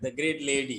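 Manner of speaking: ordinary talk, nothing marked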